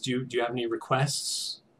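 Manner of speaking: murmured, soft, quiet, understated delivery. Game master voices a player musician who nods to the party: quiet voice. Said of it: "in a quiet voice".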